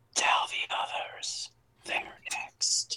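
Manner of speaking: slow, menacing, threatening whisper. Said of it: "leans in and just goes".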